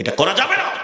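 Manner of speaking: stern, high, sharp called-out cry.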